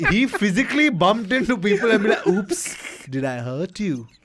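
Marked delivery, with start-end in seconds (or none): 2.3-4.0 put-on, very slow, drawn-out, sultry seductive voice. Retelling how a man bumped into people after losing, imitating a seductive voice. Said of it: "In the most seductive voice possible".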